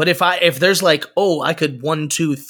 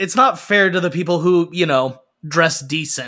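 ordinary delivery

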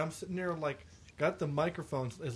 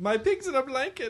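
very high, loud, shrill put-on German accent; 10 semitones higher, 9 dB louder than usual. On the show, asking a co-host to do the accent, in a fake german accent. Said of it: "Please do your accent".

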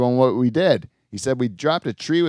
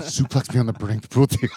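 imitated whispering. Retelling how a friend kept whispering a request: imitating Adrian whispering. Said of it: "he kept whispering to me".

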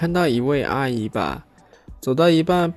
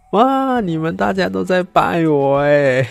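mock-happy cheerful voice, higher and louder; 6 semitones higher, 4 dB louder than usual. Retelling what a kid said to his family, retelling a happy remark. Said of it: "开心的说".

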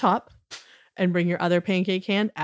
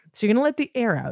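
normal talking voice

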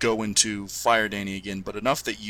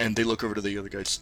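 usual speaking voice

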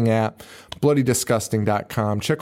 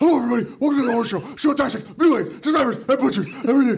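very high, sped-up horror host voice; 14 semitones higher than usual. Doing a podcast intro as another host: fast Robert Frank impression. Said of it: "I'm doing it at the speed of him fast forward".

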